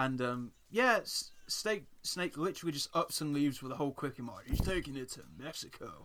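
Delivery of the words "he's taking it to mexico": animated cartoon voice, pitch swinging and swooping all over. Recapping a cartoon episode, quoting the character Snake: Snake impression. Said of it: "That's quite a good impression".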